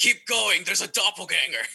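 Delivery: half-yelled, restrained yell in character voice. Playing a character who yells at another figure: yelling in character. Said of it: "I'm gonna yell at this dude".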